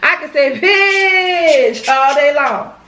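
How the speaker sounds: bitch said slow, drawn out, with changed inflection.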